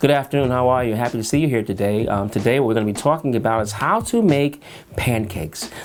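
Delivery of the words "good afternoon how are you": flat monotone, one pitch, no variation. Showing how someone sounds without switching placement, flat monotone voice. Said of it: "It's just monotone, one placement".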